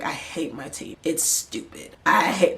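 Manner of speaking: mock mumbling under breath. Retelling what he muttered about his own team, imitating him mumbling under breath. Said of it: "mumbling under his breath".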